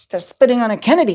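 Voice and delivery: stunned, disbelieving, can't-believe-it exclamation. Retelling a woman's reaction to people spitting on a man, imitating disbelief. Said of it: "just goes like just as in disbelief".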